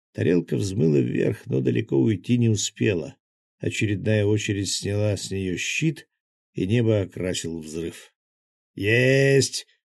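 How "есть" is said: gleeful, joyful shout, drawn out long. A narrator reads a character's joyful shout as an explosion lights the sky. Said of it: "радостно заорал Захар".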